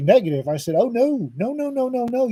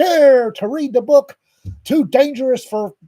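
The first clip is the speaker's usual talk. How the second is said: slow, drawn-out carnival barker voice; 4 semitones higher, 4 dB louder than usual. Retelling how a book was promoted: imitating Mike's carnival barker voice. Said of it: "Mike trotted out his best Carnival Barker voice".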